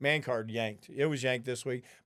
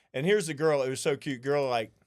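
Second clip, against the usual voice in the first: plain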